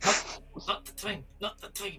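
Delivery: whispering. Hushing another player during a scene: whispering. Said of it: "I'm whispering back".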